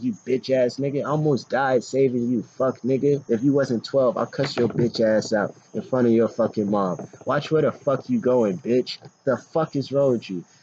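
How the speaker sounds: imitated furious cursing. Retelling cursing at a kid who ran away: retelling furious cursing. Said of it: "I was mad as fuck".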